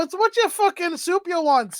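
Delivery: bad Scottish accent. Asked to do the accent they are worst at: bad Samurai Jack Scotsman impression. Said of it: "do Scottish".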